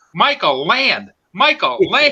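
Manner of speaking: high yell, pitch swinging up and down. Recalling yelling at the screen as a drone's battery runs low, retelling a yell. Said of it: "I'm yelling at the screen".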